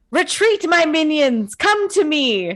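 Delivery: high, stretched-out, drawn-out witch's shriek. Describing their game plan, the speaker shows what they call out; screaming in the witch's voice. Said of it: "I just scream out in the witch's voice".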